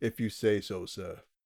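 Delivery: soft, flat, dead-level put-on butler monotone. Recapping a scene, voicing the butler's reply in a monotone. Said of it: "giving him a monotone".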